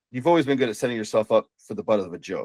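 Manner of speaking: normal talking voice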